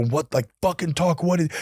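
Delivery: mock mild, contained half-yell. Retelling yelling at his crying wife on the phone: retelling his own yell. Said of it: "And I start yelling".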